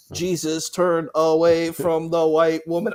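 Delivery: slow, drawn-out street preacher proclamation. Doing an impression of the street preachers seen in Philadelphia: impersonating street preachers. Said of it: "impersonation of them".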